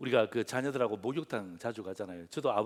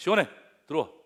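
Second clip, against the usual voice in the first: loud, high, angry scolding tone. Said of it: "화를 내죠".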